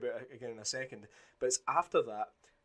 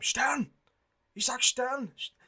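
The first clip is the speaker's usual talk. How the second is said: acted shout, much higher, slower; 12 semitones higher, 6 dB louder than usual. Recounting a film scene where a man runs beside a train, retelling a shouted name. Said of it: "running along just shouting his name".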